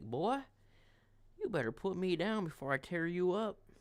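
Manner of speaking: pet cat character voice, talking back. Holding the cat and speaking for it: voicing the cat Thor. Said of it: "she's like".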